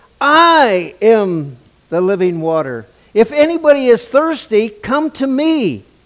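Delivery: very loud shout, building up and rising. Retelling how he cried out to the celebrating people, as a loud shout. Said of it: "He yells out in a loud voice".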